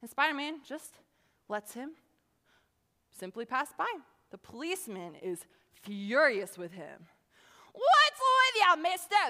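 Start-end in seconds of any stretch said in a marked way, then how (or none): 7.7-9.3 put-on very high, very loud, shrill New York accent. Retelling a Spider-Man scene, the speaker voices the policeman; New York accent. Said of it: "This is my New York accent".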